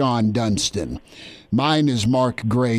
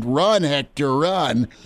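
put-on screaming voice, loud and urging; 3 semitones higher than usual. Retelling a triple where Harry yelled at the runner: imitating Harry screaming. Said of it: "Harry's screaming".

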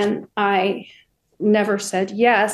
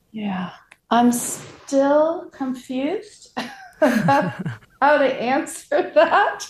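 chuckling through the words; 4 semitones higher than usual. Asked by the interviewer what beauty actually is, the guest answers, laughing while talking. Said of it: "I'm sorry, I'm laughing".

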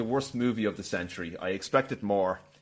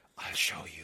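tender, soft, sensual whisper, close to the ear; 8 semitones lower, 9 dB quieter than usual. Quoting Hammond's reply to Grant, imitating Hammond's sensual whisper. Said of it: "whispers kind of lo-, sensually and lovingly into his ear".

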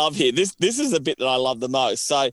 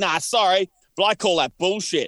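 put-on angry outburst, higher pitched; 5 semitones higher than usual. Retelling a contestant arguing while the referee moves on: imitating Guy blowing up. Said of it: "Guy's still blowing up about it".

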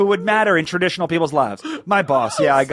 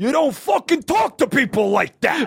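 raised, high-pitched mock shout; 9 semitones higher than usual. Retelling a fight at Bagel Boss, quoting a man pinning someone down: imitating someone yelling. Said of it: "And he's yelling in his ear".

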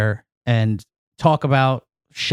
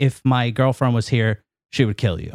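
ordinary delivery

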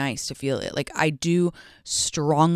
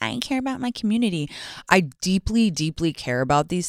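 cheesy, over-sincere, fake-earnest, gushing influencer voice; 4 semitones higher than usual. Mocking how an influencer would talk in a forced way, cheesy influencer impression. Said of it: "like an influencer being like".

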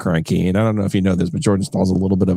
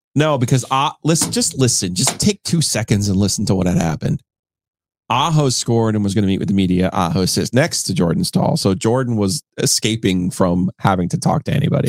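normal talking voice

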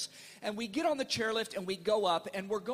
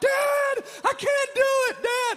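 frantic, panicked, very high and loud cry; 10 dB louder than usual. A father retells his oldest son freaking out while skiing: imitating a son freaking out. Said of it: "my oldest son is freaking out".

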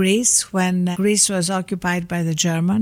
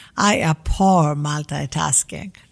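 very stern, strict put-on Greek accent; 4 semitones lower than usual. Retelling what she said on seeing you on your phone with your daughters, in a put-on very stern Greek accent. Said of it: "said in a very stern Greek accent".

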